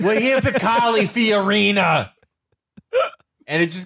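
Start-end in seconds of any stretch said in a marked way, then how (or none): 0.0-2.1 mock screaming, higher pitch. Retelling two guys who showed up at an event: imitating someone screaming. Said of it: "they just showed up screaming".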